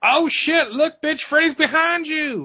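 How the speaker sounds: put-on, very high, slow, drawn-out holler. Retelling a lady behind them at the theater: imitating someone yelling at a screen. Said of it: "Yelling at the fucking movie screen".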